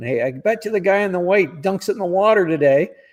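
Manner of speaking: mock rowdy, high-pitched, jeering heckle shout. Retelling spectators on a hill betting on golfers: imitating fans shouting a heckle. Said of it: "they'd be shouting".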